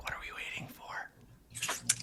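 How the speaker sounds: very quiet, very slow, breathy whisper. Voicing a hiding companion asking another character a question: whispering. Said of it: "whispering to you".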